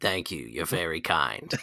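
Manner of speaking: put-on low, soft, hushed New York accent. As the cursed shopkeeper, thanking someone for a compliment, slipping into [name]'s New Yorker voice. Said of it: "You slipped in a New Yorker".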